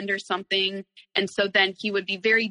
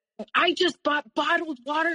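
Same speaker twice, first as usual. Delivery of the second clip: acted angry, freaked-out outburst, higher pitch; 8 semitones higher than usual. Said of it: "freaking out at me".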